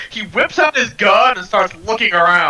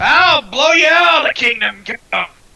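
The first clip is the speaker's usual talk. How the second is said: shouting captain character voice, pitched higher; 6 semitones higher, 3 dB louder than usual. Voicing the captain who looks out at the arrivals: in-character captain shouting. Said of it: "he's gonna be like".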